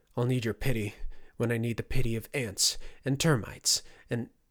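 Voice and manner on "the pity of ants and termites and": ordinary delivery, nothing marked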